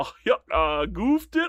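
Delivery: silly, exaggerated high voice. Acting out a reaction to a mistake, in a goofy voice. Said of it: "Do the goofy voice? Okay".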